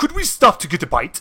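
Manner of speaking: put-on British accent. Narrating a scene, voicing one of the hungry figures asking the group, british accent. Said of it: "They have a British accent?".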